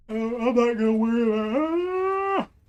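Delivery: words stretched through a yawn, very slow. Talking through a run toward the dragons, yawning while talking. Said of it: "I'm yawning".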